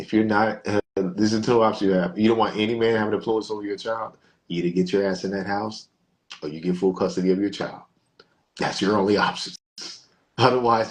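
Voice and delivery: ordinary talk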